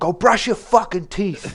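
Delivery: angry high-pitched yell. Retelling what a pissed-off father said after work: imitating an angry father yelling. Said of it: "clearly he just wanted to yell at somebody".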